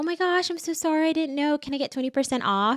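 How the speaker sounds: sweet, small, innocent voice. Showing how a woman can flirt for a discount, in a cute little voice. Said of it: "talk in a cute little voice".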